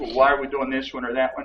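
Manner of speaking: usual speaking voice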